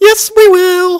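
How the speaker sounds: very high, very loud, shrill, obnoxious annoying voice. Retelling a story and voicing the other side's reply: really annoying voice. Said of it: "Just this really annoying voice".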